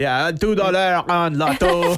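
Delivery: put-on French Canadian accent, loud and slow. Show someone who can't do the accent how it goes, in a Jean Chrétien accent, not too gruff. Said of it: "a Jean Chrétien accent".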